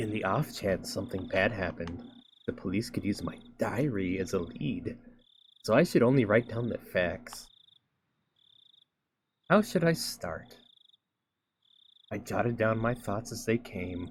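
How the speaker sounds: sultry, seductive, very sexy narrating voice. Reading Higurashi aloud after being asked for sexiest voice: sexiest voice possible. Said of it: "read Higurashi, but in your sexiest voice possible".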